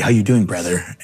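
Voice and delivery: smug, swaggering, cocky and arrogant tone. Retelling how an arrogant man greeted him while he did dishes: imitating a cocky tone.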